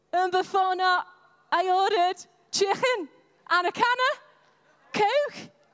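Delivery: put-on high-pitched, loud Liverpool accent. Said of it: "And then I moved to Liverpool".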